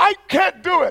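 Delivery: acted, high, exasperated, frustrated shout. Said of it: "I was shouting".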